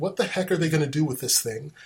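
ordinary talk

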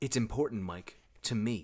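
hushed, brought-down voice. Narrator reading a woman's line to Mike, in a lowered voice. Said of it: "She lowers her voice and says".

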